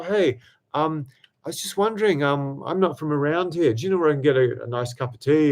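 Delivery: wimpy, timid, hesitant, faltering voice. Giving advice on approaching strangers, acting out a wimpy opener, timid. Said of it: "if you're a bit more wimpy".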